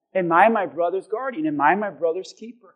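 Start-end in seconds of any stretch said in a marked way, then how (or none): none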